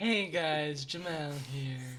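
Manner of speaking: very slow, drawn-out, unenthused delivery. Mimicking how another player sounds during introductions, imitating Jamal. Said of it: "He sounds like a le-".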